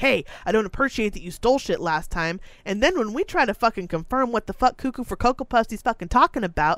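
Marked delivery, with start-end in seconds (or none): 0.0-2.4 put-on aggressive, hostile-sounding voice. Retelling an accusation made in a store: imitating someone speaking aggressively. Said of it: "he comes up and just aggressively is like".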